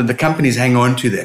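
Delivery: ordinary talk, nothing marked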